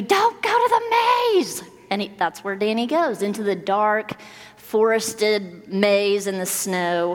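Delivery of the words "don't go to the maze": high-pitched, loud yelled shout. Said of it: "You're screaming at the T V".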